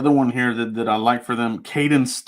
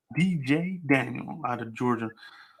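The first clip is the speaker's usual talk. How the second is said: very quiet, hushed radio DJ announcer voice; 9 dB quieter than usual. Saying a drafted player's name, in a DJ voice. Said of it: "you use the D J voice to say his name".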